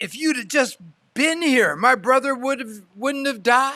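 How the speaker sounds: put-on bitter disappointed tone. Retelling Martha's words to Jesus after her brother died, with bitter disappointment. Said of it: "you can hear the bitter disappointment in her voice".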